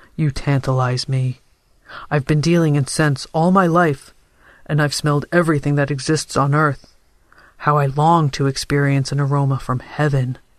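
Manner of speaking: plain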